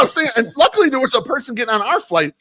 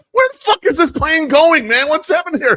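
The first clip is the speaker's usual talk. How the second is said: put-on annoyed outburst, higher; 5 semitones higher than usual. Retelling own reaction to a plane's long taxi to the gate: imitating own annoyed self. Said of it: "so annoyed by it".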